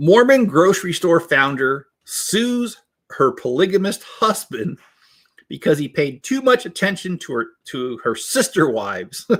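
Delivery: high voice, read aloud through laughter. Reading a news summary aloud to viewers, laughing while reading. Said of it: "I can't even read this without laughing".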